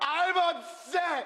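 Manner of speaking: yelling out loud. Ordered to say it louder so the whole band can hear, shouting.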